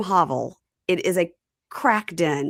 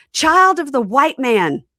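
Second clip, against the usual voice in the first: high, loud, ritual-sounding yell; 6 semitones higher, 8 dB louder than usual. Retelling a scene where a priest greets a woman: imitating the priest yelling. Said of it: "he yells".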